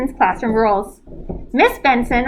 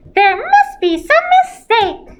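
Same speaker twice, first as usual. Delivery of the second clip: squeaking, very high-pitched squeaky voice; 12 semitones higher, 4 dB louder than usual. Narrator reads a boy playacting in front of officers, high, squeaky voice. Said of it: "said in a high, squeaky voice".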